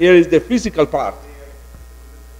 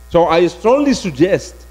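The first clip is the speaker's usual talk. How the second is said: normal talking voice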